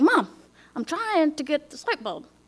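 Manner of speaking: fed-up, exasperated, curt. Retelling cutting off a mom who kept talking over them, retelling exasperation. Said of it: "but I'd had it".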